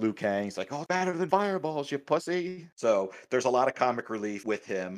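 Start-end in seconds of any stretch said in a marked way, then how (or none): 0.7-2.7 put-on, very high, thrilled, excited gloating. Speaker retells a game character's excited reaction to his new powers, taunting another character; put-on excited impression. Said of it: "he's all excited".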